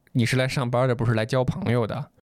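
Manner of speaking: normal talking voice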